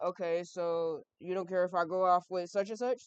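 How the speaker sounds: ordinary talk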